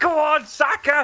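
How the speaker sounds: put-on drunk woman's voice, screaming.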